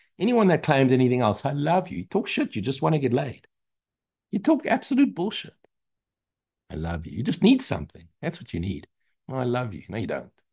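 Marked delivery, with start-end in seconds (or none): 9.3-10.3 sarcastic tone, much quieter. Acting out a short exchange to make a point, sarcastic. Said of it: "Does it sound sarcastic?".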